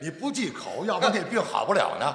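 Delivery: Shandong dialect accent. Answering a partner in a comic dialect exchange: Shandong dialect accent. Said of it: "你这山东话还行".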